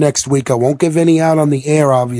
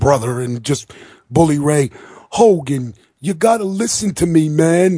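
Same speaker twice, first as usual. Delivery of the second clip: fake, laid-on, exaggerated New York accent. Retelling what Bully Ray told Hogan: Bully Ray New York accent. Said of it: "with that New York accent of his".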